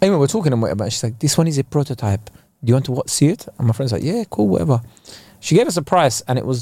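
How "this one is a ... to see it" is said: put-on, easygoing French accent. Retelling a visit inside a shop, quoting the woman there in a French accent. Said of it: "she had a French accent".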